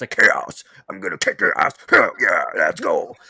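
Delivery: low-pitched bro-style video game hero voice. Describing how a video game sounds, imitating the game's hero. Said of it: "that's what the game sounds like".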